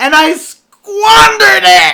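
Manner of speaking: high, loud, anguished, despairing crying wail.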